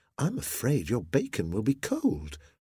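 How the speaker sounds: usual speaking voice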